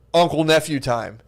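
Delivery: put-on authoritative tone. Retelling what the uncle said through a shut door: imitating someone saying it with authority. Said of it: "he just said it with such authority".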